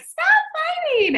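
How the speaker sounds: very high, shrill, squealing scream. Retelling yelling at two boys fighting down the stairs: retelling a high-pitched scream. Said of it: "my voice got really high".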